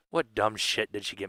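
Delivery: fake grumbling, low and soft. Retelling a brother opening a birthday package: imitating him complaining. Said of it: "shaking his head".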